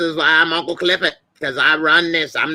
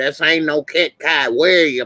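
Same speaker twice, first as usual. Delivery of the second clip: plain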